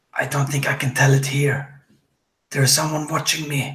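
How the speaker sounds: hushed whisper. A character whispers to both Frida and Joseph, whispering. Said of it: "like whispers to to the both of uh".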